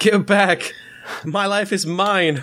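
very high, slow, drawn-out shouted cry. Voicing a character yelling back at a pursuer: yelling. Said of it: "she's gonna yell back in Dwarven".

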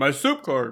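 words spoken through a full mouth. Answering where Albert hangs out while eating bread, talking with mouth full. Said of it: "Sorry, I put a piece of bread in my mouth".

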